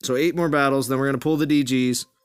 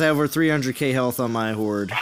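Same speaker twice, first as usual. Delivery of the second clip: plain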